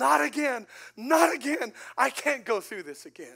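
very loud, high screaming cry, broken down. A father retelling how his wife broke down at the news, imitating her screaming. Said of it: "she started screaming".

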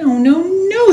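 loud, very high squeaking cry. Mortimer finds soggy dirt where his seed is planted, squeaking. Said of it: "squeaked Mortimer".

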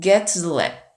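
"get" and "lab" stressed, rest reduced.

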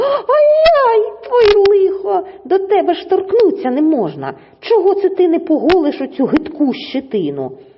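high pained squeal, ай-яй drawn out. Narrator reads the fox after she shoves the hedgehog, squealing in pain. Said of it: "аж завищала від болю".

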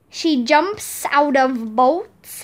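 plain reading voice

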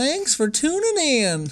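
very high, swooping sarcastic sing-song. Repeating the other speaker's sign-off line: sarcastic. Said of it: "Did you say that more sarcastically?".

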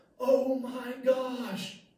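sudden, high, loud shouting. Retelling a quiet classroom suddenly interrupted: imitating Danielle shouting. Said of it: "Danielle shouts out".

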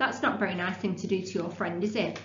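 ordinary talk

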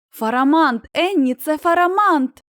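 gleeful, loud, joyful shout. A child spots a dragon circling overhead and calls to another child, joyful shout. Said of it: "радісно загорлав Тім".

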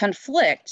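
conFLICT, stressed on second syllable, slow.

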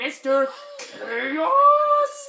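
very loud, booming, bad villain voice. A video host presenting his Skylander to viewers, terrible Chaos impression. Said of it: "That was a terrible Chaos impression".

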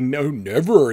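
mocking, sarcastic voice. Retelling the sarcastic reply that comes back: sarcastic reply. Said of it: "the sarcastic".

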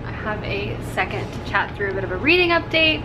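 plain

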